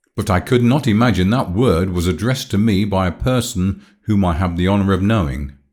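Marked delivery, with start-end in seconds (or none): none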